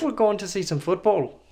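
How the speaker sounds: put-on, attempted Irish accent. Co-host joking on air about the game in Dublin, put-on Irish accent. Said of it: "This is my best Irish accent I can pull out".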